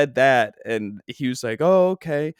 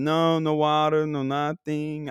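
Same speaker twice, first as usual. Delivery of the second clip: fake foreign accent, maybe French, higher; 2 semitones higher than usual. Retelling answering someone who asked for a treat, in a fake accent, maybe French. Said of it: "I don't know why I'm doing these accents".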